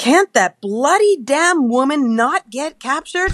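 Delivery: put-on very high-pitched yelled outburst, screaming. Retelling how the speaker's husband screamed at the television, retelling a scream. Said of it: "He screamed at the television".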